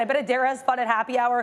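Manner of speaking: ordinary delivery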